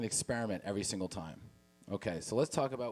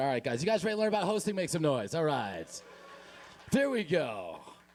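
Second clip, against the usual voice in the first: mock hyped-up host energy, pitched higher; 6 semitones higher, 3 dB louder than usual. Raising the energy for the audience after asking if too monotone: put-on high energy. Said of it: "we'll bring it up a little bit".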